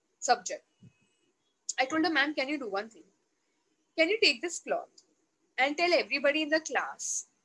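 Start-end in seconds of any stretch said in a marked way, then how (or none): none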